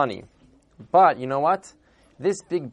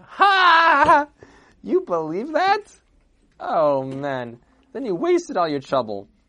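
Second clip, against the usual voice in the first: high, swooping put-on speech bursting out between laughs; 9 semitones higher, 4 dB louder than usual. Telling a story, the speaker acts out a bishop bursting out laughing. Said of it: "started bursting out laughing".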